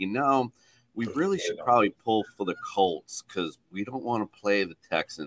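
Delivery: hushed, soft stage whisper close to the ear. Retelling what someone half-whispered in their ear: imitating someone half-whispering. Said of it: "he just whispers in my ear".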